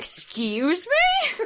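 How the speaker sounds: put-on, staged, high-pitched horrified and shocked voice. Acting out a boss learning the crunch schedule: acting horrified. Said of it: "Tim Sweeney looks up horrified".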